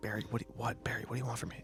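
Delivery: quiet whispered voice. Talking to someone only he knows about, whispering over his shoulder. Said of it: "I'm like whispering over my shoulder".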